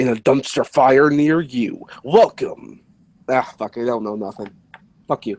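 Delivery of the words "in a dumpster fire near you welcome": slow movie trailer announcer voice. Asked to announce the Conjuring movie, delivering it in a movie announcement voice. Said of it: "announce the Conjuring movie".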